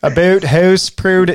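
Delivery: put-on Canadian accent.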